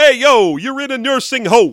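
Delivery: loud, high, brash New York comic voice.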